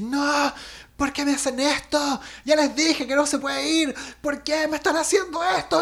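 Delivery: put-on very high, exploding angry outburst. Retelling a classmate's reaction when others push the trip, imitating an angry outburst. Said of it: "mi compañera explota así".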